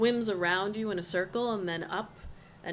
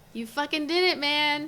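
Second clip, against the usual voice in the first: high, loud, excited, laughing through the words; 8 semitones higher, 6 dB louder than usual. Voicing a character in a scene, speaking to a player, Izzi laughing excitedly. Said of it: "Izzi is laughing and is like".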